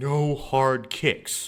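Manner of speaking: secretive, voiced stage whisper. Retelling what he half-whispered to the speaker's sister before sparring, half-whispering. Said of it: "he like whispers to my sister".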